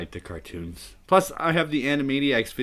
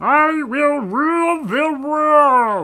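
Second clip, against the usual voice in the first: very high, loud, funny, silly put-on voice; 8 dB louder than usual. Speaker shows off a favorite line to say in that voice, funny put-on voice. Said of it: "That's my favorite thing to say in that voice".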